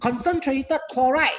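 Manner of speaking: "concentrated" stressed, pitched high and loud.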